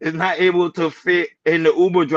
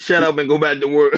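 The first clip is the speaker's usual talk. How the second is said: plain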